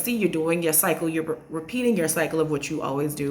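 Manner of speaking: ordinary talk, nothing marked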